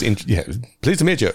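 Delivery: snooty, haughty, stuck-up put-on voice. Imitating a man greeting someone, snooty voice. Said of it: "Snooty kind of voice".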